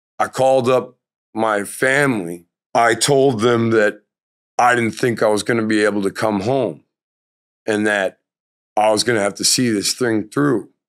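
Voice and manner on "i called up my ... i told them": ordinary delivery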